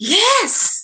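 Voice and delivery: enthusiastic yes. A speaker demonstrates the enthusiastic way to say yes, enthusiastic. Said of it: "What about the enthusiastic yes?".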